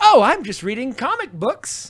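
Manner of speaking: easy, slow, lilting, musical sing-song voice. Imitating a performer from the show: imitating Adrian's lilting voice. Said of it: "his voice always has a lilt in it".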